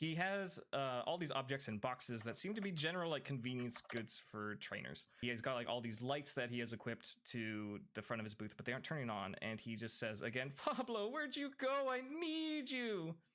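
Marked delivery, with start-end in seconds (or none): 10.6-13.1 very high, slow, drawn-out, distressed, upset calling. Describing a young trainer at his booth calling out for someone: imitating an upset young man. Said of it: "He's he's like very upset".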